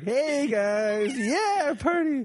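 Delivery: very high, very slow, drawn-out high-energy party hype. Showing what playing a high-energy character would sound like: imitating a high-energy person. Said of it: "play someone with high energy".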